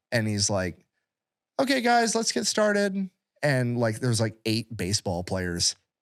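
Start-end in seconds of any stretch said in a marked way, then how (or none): 1.6-3.1 put-on very high, meek, mild elderly voice. Retelling how the elderly teacher started class: imitating Mister Coleman, soft-spoken. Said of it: "super soft-spoken".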